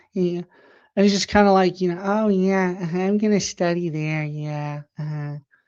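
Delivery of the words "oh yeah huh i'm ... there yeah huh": annoying, agreeable, spineless yes-man guy voice. Retelling chatting with a woman's husband: imitating an annoying beta dude's voice. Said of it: "He talks in a voice like this".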